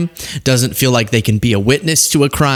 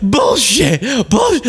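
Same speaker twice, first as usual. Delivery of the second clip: put-on scream, higher; 12 semitones higher than usual. Retelling a guest cutting in over an interviewer: imitating someone screaming. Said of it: "screaming it out".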